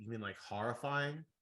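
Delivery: ordinary talk, nothing marked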